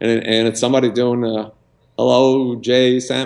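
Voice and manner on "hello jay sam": poor, lousy put-on Arkansas accent. Retelling a phone call from the president: imitating a lousy Arkansas accent. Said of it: "Arkansas lousy accent".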